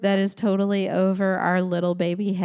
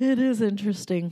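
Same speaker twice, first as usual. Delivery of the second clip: words stretched out, spoken through a yawn; 2 semitones higher than usual. Co-host agreeing that something is interesting: yawning while speaking. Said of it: "As you're yawning".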